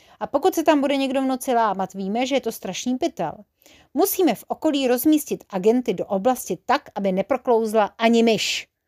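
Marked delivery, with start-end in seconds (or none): none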